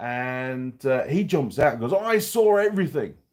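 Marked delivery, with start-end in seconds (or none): 1.9-3.1 put-on Maori-accented speech. Retelling what a driver said after pulling up in front, in a Maori accent. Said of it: "in a in a Maori accent".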